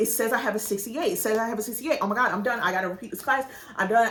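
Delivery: play-acted freaking out, fast, frantic, words tumbling out. Recounting checking her grade after a final, she is retelling freaking out. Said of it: "I'm like freaking out".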